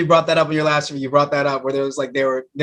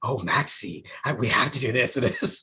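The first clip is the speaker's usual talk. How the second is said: soft, theatrical, dramatic villain voice; 3 semitones lower, 8 dB quieter than usual. A fan describing a favorite villain does a dramatic Peter August voice. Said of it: "the dramatic voice".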